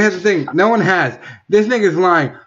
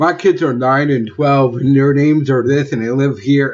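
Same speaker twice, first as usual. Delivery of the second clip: usual speaking voice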